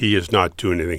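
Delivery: normal talking voice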